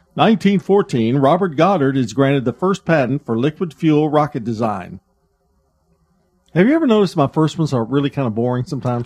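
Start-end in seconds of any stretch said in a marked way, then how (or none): 0.2-5.0 reading like a segment announcer. Reading the first history item of the segment, in the Today in History voice. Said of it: "let me do this in my Today in History voice".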